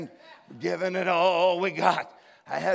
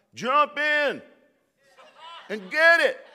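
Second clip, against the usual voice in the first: put-on slow, high, long, carrying holler; 8 semitones higher, 4 dB louder than usual. Telling how a guy on the boat hollered out to him: retelling a holler. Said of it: "hollered out".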